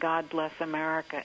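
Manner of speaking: plain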